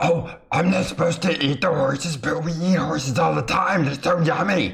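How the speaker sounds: high-pitched wolf character voice. A wolf immediately answers back after being threatened: wolf voice. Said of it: "he he immediately responds back in wolf".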